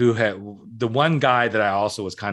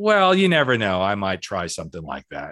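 worst fake masculine voice, swooping pitch; 2 semitones lower than usual. Speaker retells their own reply to another guy, bad straight guy voice. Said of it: "that was the worst straight guy voice I've ever heard".

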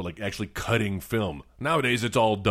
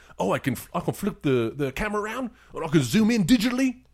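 squeaky, very high put-on voice, chattering; 9 semitones higher than usual. Imagining a director discovering editing tricks: Guy Ritchie voice. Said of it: "I like your Guy Ritchie voice".

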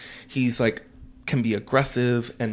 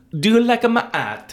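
put-on Italian accent, higher and louder; 11 semitones higher, 6 dB louder than usual. Retelling the phrase from a video on speaking in an Italian accent: imitating an Italian accent. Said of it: "how to speak in an Italian accent".

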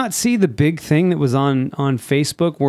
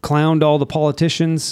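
normal talking voice

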